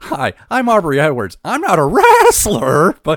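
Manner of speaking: very high, loud, slow, swooping pitch. Mocking a TikTok video with an Aubrey Edwards impression. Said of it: "That was a good Missus Ed impression".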